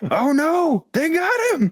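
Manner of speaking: shrill, very high, swooping, stretched-out dramatic wail. Seeing an ally fall in battle, in character: dramatic scream. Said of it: "Just 'cause of the dramatic scream".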